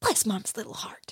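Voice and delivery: forced out through clenched teeth. Replying to a classmate whose mom promised she'll stay until graduation, through gritted teeth. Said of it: "She's like saying it through gritted teeth".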